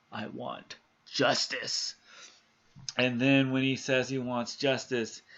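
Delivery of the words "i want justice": deep, dark, hushed, breathy whisper. Retelling the man in the ceiling saying what he wants, in a deep, dark voice. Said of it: "in a deep, dark voice".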